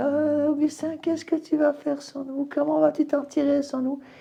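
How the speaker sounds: small, gentle, soft little voice, very high. Retelling the voices of tempting women from visions: soft little voice. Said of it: "avec une petite voix douce".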